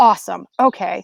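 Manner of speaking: plain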